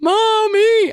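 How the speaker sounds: put-on very high, loud, terrified child's scream. Retelling her child reaching to her on a ride, imitating a child screaming. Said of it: "she was reaching to me like".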